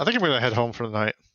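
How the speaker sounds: fast, loud speech in a British accent.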